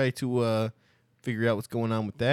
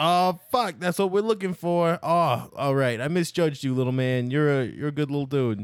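yelling in a put-on character voice; 4 semitones higher, 4 dB louder than usual. Voicing a character who finds the gem in the toilet: yelling in character. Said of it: "he yells".

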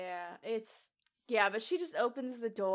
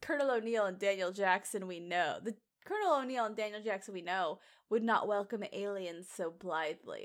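plain

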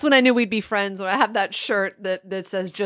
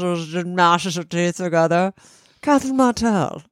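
put-on British accent spoken through clenched teeth. Discussing a character's fake accent, doing a fake British accent as Catherine Martell. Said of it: "It just talks like this".

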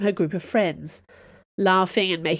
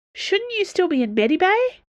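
sudden blurt, pitched way up, high; 12 semitones higher, 3 dB louder than usual. A woman confronts an injured man: blurted out. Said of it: "she blurted out".

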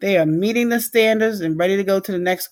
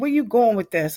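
put-on, pushy, challenging and confrontational tone; 4 semitones higher than usual. Showing the wrong way to approach a teacher: confrontational tone with a teacher. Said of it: "the tone in which you speak to the teacher".

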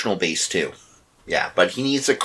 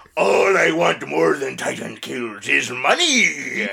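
rough, creaky cartoon crab captain voice, money stretched; 3 semitones higher than usual. Commenting on a game with a co-player, Mr. Krabs voice. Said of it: "Mr. Krabs".

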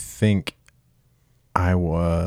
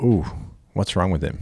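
normal talking voice

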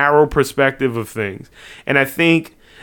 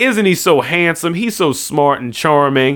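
normal talking voice

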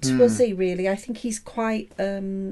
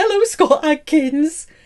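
mock eager, thrilled, excited tone; 6 semitones higher, 8 dB louder than usual. Speaker retells meeting a man nobody recognized, retelling an excited greeting. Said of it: "we were really excited".

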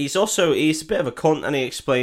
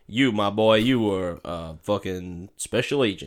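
lazy, slow, stretched-out Southern cowboy drawl; 5 semitones lower, 3 dB quieter than usual. Retelling a film scene, quoting the villain: Jeffrey Dean Morgan Southern cowboy voice. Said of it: "Do I do the voice?".

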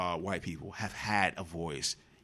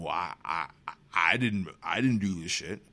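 mocking, stammering, defensive tone; 4 dB louder than usual. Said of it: "you're pretending".

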